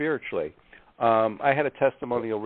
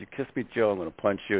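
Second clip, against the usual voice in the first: put-on muttering, under the breath; 2 semitones lower than usual. Retelling what a buddy said on stage at a hypnotist show: imitating someone muttering under breath. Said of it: "I can hear Keith under his breath".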